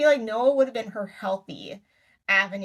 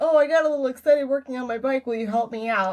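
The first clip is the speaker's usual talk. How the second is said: put-on innocent voice, higher and louder; 4 semitones higher, 4 dB louder than usual. Mocking how a book character talks: innocent Caleb voice. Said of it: "innocent little Caleb that was like".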